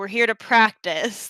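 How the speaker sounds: grumbling, complaining tone. Retelling what was said at the start of the clip: imitating own grumbling.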